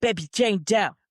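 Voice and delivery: rough put-on Pittsburgh Delco accent, not quite right. Showing someone how Dana talks on the show, use Dana's Delco accent, not quite right. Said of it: "that's like that Pittsburgh Delco accent".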